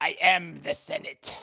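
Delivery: slow, drawn-out film villain voice. Asking Rob whether to read it in his voice, the speaker does an Emperor Palpatine voice. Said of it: "Emperor Palpatine-esque there, Rob? Should I have read that in his voice?".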